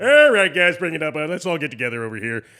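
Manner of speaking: very loud, bellowing cartoon-pig voice. Telling listeners to close their eyes and hear how he talks, Randy Johnson impression. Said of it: "He sounds like the Toy Story pig".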